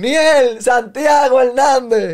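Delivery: very loud, very high, shrill crowd shouting. Recounting people being called out while the crowd yelled, retelling a crowd shouting names. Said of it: "la gente gritaba".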